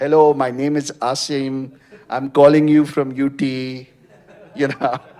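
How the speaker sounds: put-on loud, thick Pakistani accent. Recalling his first cold calls asking for donations, thick Pakistani Desi accent. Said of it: "with my thick Pakistani Desi accent".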